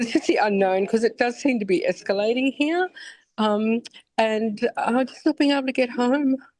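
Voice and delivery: high, tearful voice near crying, barely holding on. Woman stuck in Doha speaks to a news report, near tears. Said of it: "I'm sorry if I cry".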